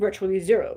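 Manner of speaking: dumb put-on man's voice. Repeating an interviewee's quoted answer, in a stupid man voice. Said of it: "I wish I could say that in a stupid man voice".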